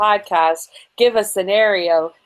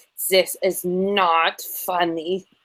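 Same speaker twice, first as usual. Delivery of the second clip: put-on heavy German accent, slow; 4 dB quieter than usual. Imagining the Pope's reaction, a speaker puts on a Pope Benedict German accent. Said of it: "in his very German accent".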